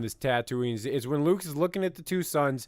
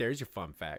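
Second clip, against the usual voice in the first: put-on snide, sneering tone at the end; 5 semitones lower, 7 dB quieter than usual. Mimicking how a man ended his fun fact, with mock snideness. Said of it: "There was a slight bit of snideness at the end. Like".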